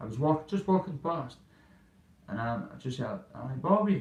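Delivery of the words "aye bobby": put-on loud, high, called-out Glasgow accent. Retelling hearing someone call out while walking past: imitating a Glaswegian accent. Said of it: "Is that Glaswegian accent?".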